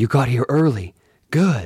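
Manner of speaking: schoolboy voice, conspiratorial, secretive whisper. A man greets the narrator, who has arrived early, in a schoolboy conspiratorial whisper. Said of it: "in that schoolboy conspiratorial whisper".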